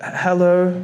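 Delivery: small, meek, timid, shy voice. Mocking activists who greet people meekly, mock-meek hello. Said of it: "when activists are meek, you know, like".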